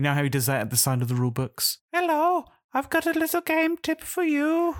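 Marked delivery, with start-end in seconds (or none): 1.9-4.8 very high, slow, silly cartoon voice. Imagining a little cartoon waving beside the rule book: cartoon Uwe Rosenberg voice. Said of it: "You've done the voice fantastic".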